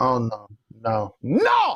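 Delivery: mock very slow, drawn-out, swooping angry voice. Retelling how his partner refused at the video store: imitating someone getting mad. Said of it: "she just gets so mad".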